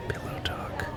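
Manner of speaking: hushed ASMR whisper.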